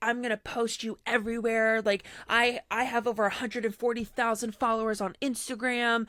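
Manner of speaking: mock-angry, heated ranting delivery. Retelling how a woman on a dating app went off on a man, retelling an angry rant. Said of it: "going off on this dude".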